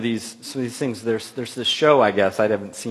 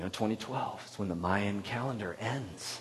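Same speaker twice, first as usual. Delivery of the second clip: soft, very quiet, hushed mystical murmur; 13 dB quieter than usual. Recalling how someone first told them something years ago; imitating a mystical voice. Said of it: "almost had this mystical voice as they said it".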